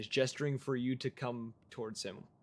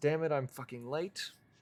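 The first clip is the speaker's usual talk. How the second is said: with a sigh; 3 semitones higher than usual. Narrating a game scene, voicing a character who arrives late, sighing. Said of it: "kind of lets out a sigh and just says".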